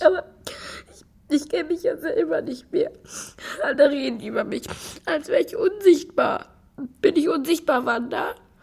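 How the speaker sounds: tearful crying. Asked why they are crying over Alexa, the speaker answers Wanda, crying. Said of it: "Warum weinst du?".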